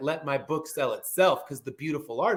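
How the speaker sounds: normal talking voice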